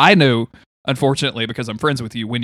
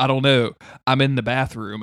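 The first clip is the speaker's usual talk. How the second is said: plain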